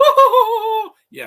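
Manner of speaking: very high, very loud, grating put-on British accent. Reviewing a movie, the speaker mimics two of its characters: imitating how they talk. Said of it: "they talk like this".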